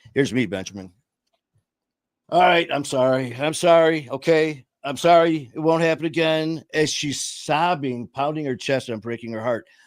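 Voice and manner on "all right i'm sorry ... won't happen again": careless, offhand, dismissive tone. Retelling his own careless apologies to his sobbing mother: imitating his own dismissive past self. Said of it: "I didn't give a fuck".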